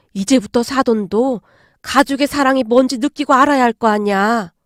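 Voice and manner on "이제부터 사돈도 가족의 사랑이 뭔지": ordinary delivery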